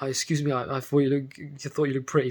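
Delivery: put-on stuttering, stumbling over words. Retelling stopping a girl across the road: imitating own stuttering. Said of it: "just stumbling, like, muttering, stuttering".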